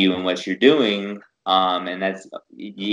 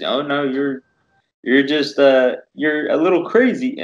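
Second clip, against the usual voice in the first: put-on voice, pitched up; 6 semitones higher than usual. Quoting their doctor's verdict in a Kermit the Frog-like voice. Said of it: "I'm using his voice because he talks like uh he, he talks like Kermit the Frog kind of".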